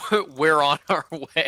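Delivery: very loud, panting voice. Voicing a running character speaking over a magic stone: out of breath. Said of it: "you hear Fish a little out of breath say".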